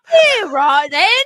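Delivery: loud, high-pitched British accent.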